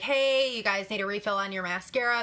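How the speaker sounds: normal talking voice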